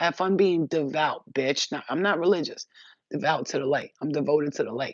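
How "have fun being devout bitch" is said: put-on screaming demon voice, yelled and taunting. Repeating the demon's parting line exactly as it was said: imitating a demon screaming. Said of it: "exactly how he said it".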